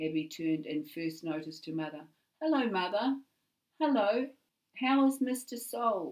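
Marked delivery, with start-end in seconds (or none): 2.4-6.1 all innocence, guileless, pitched-up voice. Abby greets her mother and asks after someone, innocently. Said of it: "She asked innocently".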